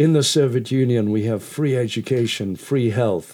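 self-important, pompous, grand delivery. Retelling what a tour guide in Russia said: imitating a pompous guide. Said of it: "rather pompously pronounced".

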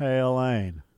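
put-on slow drawl. Imitating a man who talks like he's hypnotizing you, slow drawl impression. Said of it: "in that slow draw".

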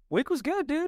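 suddenly very high-pitched voice. Answering the other speaker's question about their week, in a high voice. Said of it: "Not sure why I just went high voice on you".

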